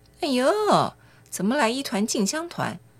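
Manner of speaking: high, sneering, near-contemptuous mocking scorn.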